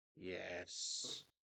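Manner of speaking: deep exasperated sigh, whispered. Voicing a character answering a sending: sighing in exasperation. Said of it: "with a deep and exacerbated sigh".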